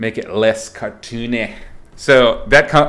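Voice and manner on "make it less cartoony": bad, unconvincing Welsh accent. Quoting a Welsh art director's favorite note: bad Welsh accent. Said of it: "that always comes with an accent".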